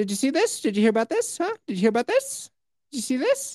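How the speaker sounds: squeaky, very high, needling caricature voice. Asking a co-host about a news story in a Jay Leno impression. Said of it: "It's Jay Leno".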